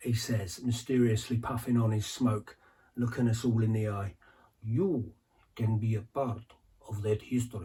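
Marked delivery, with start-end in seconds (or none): 4.6-7.6 put-on Eastern European-accented voice. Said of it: "I can't do the accent".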